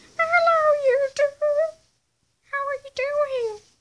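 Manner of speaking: very high, loud put-on toy penguin voice. Introducing a toy penguin to the viewers: voicing a toy penguin. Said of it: "that's my impression for him".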